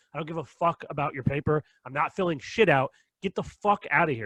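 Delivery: mock-angry, acted-out outburst. Retelling an argument with a woman who won't leave the house, retelling an angry outburst. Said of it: "Now I'm getting angry".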